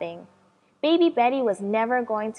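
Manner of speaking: ordinary delivery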